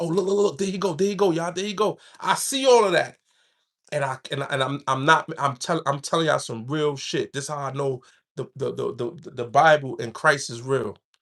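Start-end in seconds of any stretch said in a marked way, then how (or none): 0.0-2.0 fast, hushed, half-whispered stage whisper. Recounting enemies in a jail bullpen spotting the speaker, acting out their half-whispering. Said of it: "I see them whispering like".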